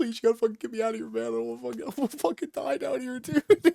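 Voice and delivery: put-on tearful, rambling crying, high and rushed. Retelling a comic scene where Foggy begs the Sentry: imitating someone crying. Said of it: "He's, like, crying".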